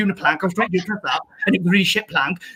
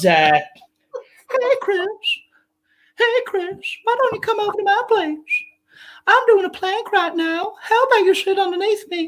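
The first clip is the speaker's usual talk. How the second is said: very high-pitched animated cartoon character voice; 12 semitones higher than usual. Listing the Family Guy characters he does, doing a Family Guy character voice. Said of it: "The only people I do from Family Guy are Peter Griffin".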